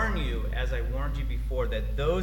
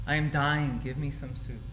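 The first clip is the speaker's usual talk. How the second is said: mock toddler sulking, childish complaining. Retelling the Genesis account, voicing the man's demand like a 2-year-old who didn't get his way. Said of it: "He sounds a lot like a 2-year-old that didn't get his way".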